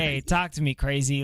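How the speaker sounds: usual speaking voice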